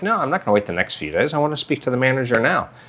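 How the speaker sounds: calm, quiet, firm delivery. Retelling what they told a woman who said she could do nothing, retelling speaking calmly. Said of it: "I'm speaking calmly. I'm not like yelling".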